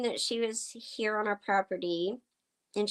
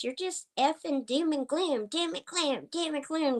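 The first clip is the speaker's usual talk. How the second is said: put-on screaming, high-pitched, ranting; 6 semitones higher than usual. Retelling a confrontation where a woman got in her face: imitating someone screaming. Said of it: "She was screaming at me".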